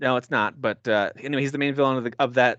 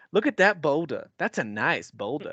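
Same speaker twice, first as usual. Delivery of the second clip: slow, deliberate, savoring each word; 3 semitones higher than usual. Quoting a favourite movie line: imitating Eddie Murphy. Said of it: "like when Eddie Murphy goes".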